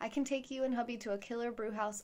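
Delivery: ordinary delivery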